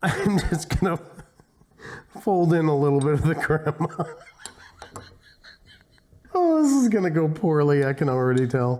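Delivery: laughing while talking, can't stop laughing. Folding in crema after losing composure, laughing while talking. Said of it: "I can't even get composed now".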